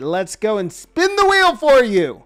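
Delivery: loud, high, excited screaming, swooping and rising. Speaker thanks a viewer for subscribing, then spins the wheel, excited screaming. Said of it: "Sorry for screaming".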